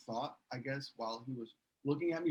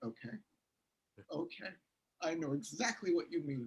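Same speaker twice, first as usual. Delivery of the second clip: play-acted, falsely confident, assured professional tone; 4 semitones higher than usual. Retelling answering a director's notes while pretending to be a professional actor: imitating own feigned professional confidence. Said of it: "pretending to be a professional actor".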